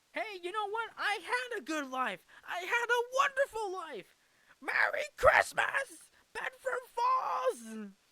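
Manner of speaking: very high, swooping, joyful excited cheer. Retelling a film ending where the character realizes he had a good life: imitating George Bailey excited. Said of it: "and George Bailey is excited too".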